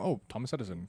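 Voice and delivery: ordinary talk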